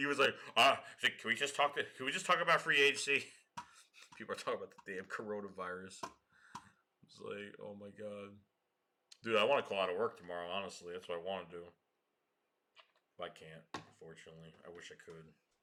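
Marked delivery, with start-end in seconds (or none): none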